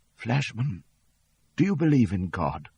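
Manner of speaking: very weak, frail, feeble, failing sickbed voice. Reading a story where a dying man asks a question: very weak voice. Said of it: "in a very weak voice".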